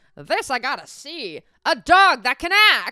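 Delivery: put-on high-pitched, loud old-timey voice.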